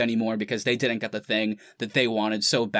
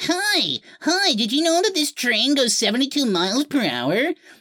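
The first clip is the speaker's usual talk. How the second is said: put-on very high, swooping tiny-toddler chatter; 4 dB louder than usual. Describing a grown man on the Polar Express train ride, man doing a three-year-old's voice. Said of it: "this 50 year old man doing the voice of a three year old kid".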